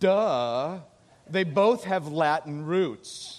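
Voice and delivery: put-on snide, condescending know-it-all tone, drawn-out duh. Retelling a fifth grader's reply at dinner: imitating a mocking, condescending child. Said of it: "in the most mocking, condescending attitude".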